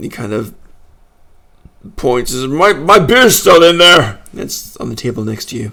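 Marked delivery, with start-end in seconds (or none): 2.5-4.2 furious little growl, loud and pitched-up. Voicing a dwarf who was thrown out, pointing at his beer: growling angry dwarf. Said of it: "so he's growling".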